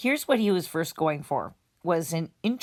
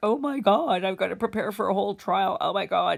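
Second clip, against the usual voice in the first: mock, frantic, freaking-out panicked babbling outburst; 3 semitones higher than usual. Recalling hearing the case was going to full trial in November: retelling own panic. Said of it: "freaking out".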